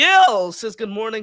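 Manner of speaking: loud voice crack breaking mid-line. Reading a viewer's greeting from the chat, voice crack. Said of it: "that was a bad voice crack".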